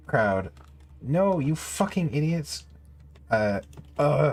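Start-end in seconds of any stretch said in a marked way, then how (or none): 1.0-2.6 fed-up, exasperated, pitched-up exclamation. Narrating a story, John answers a cheering crowd; audible frustration. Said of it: "John's audible frustration".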